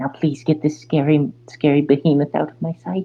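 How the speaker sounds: high whisper. Voicing a character who bends down to speak to a player, whispering. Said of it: "bends down and whispers to you".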